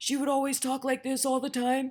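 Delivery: her natural, plain, husky everyday speaking voice. Describing how a woman named Miss Refrigerator naturally talked, imitating Miss Refrigerator's husky voice. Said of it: "she naturally had this husky voice where she talks like this".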